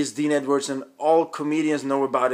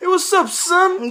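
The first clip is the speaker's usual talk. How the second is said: put-on friendly buddy voice, higher and louder; 5 dB louder than usual. Retelling how a mutual friend greets on every call: Dean Edwards impression. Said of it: "he always says that".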